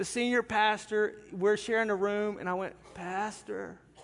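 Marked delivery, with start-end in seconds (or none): 2.9-3.8 soft, small, pathetic, pitiful-sounding voice. Retelling waking the senior pastor at 2 a.m. in a shared room, imitating a pitiful voice. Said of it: "my pitiful voice".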